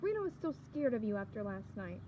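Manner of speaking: plain reading voice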